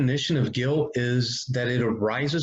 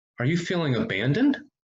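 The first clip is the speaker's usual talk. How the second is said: abandoned with a questioning rise at the end. Speaker demonstrates asking a grieving person a question, rising at the end. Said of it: "allow your tone of voice to rise at the end".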